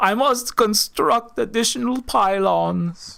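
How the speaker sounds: very slow, high, drawn-out alien voice. Acting out a homeless telepathic alien refugee pushing a cart: homeless Protoss refugee voice. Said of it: "a homeless Protoss refugee ... going like".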